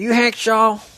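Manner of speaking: very high, put-on Southern ranch-hand accent. Retelling meeting an old Idaho man, the speaker quotes him in a put-on ranch accent. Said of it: "It's my ranch accent".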